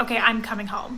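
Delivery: plain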